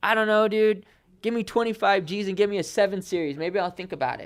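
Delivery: put-on sarcastic tone, very high-pitched. Retelling a reply to a man pushing a job offer: retelling own sarcastic reply. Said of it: "I'm being sarcastic".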